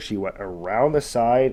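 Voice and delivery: ordinary delivery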